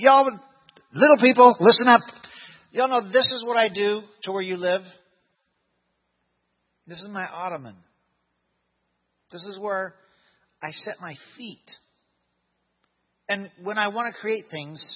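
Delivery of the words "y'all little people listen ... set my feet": biting sarcasm, mocking, put-down tone. Speaker paraphrasing God addressing people, imitating sarcastic God. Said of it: "This is God being sarcastic when he says".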